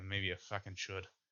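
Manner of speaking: muttering under breath. A game master voices a man in the cart answering a threat, muttered under his breath. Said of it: "maybe under his breath".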